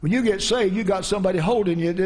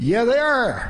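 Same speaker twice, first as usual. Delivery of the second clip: put-on Appalachian Southern mountain accent; 4 semitones higher than usual. Retelling what a man said, the speaker repeats it in a southern mountain accent. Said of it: "in the Southern Mountain accent".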